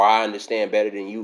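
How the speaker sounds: ordinary delivery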